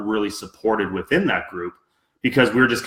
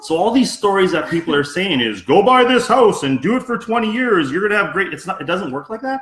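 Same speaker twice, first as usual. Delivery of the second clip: very high, sarcastic, mock-astonished voice; 10 semitones higher than usual. Joking with a co-host that real estate is easy: sarcastic mock surprise. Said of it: "obviously I'm being totally sarcastic with that".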